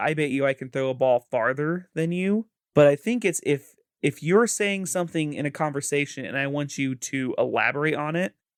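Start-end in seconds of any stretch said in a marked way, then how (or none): none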